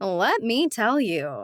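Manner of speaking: sarcastic delivery. Reading a novel aloud, the narrator's reply said sarcastic. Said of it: "I say sarcastically".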